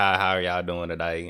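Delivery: put-on country accent. Retelling how they used to greet people after moving up here, in a country accent. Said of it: "I just had a country accent".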